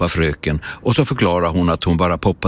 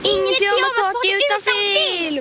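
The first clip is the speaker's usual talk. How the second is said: very high, howling voice. Salma and Ante, inside their sleeping bags, protest to the teacher, howling. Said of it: "Ylar de inifrån sovsäckarna".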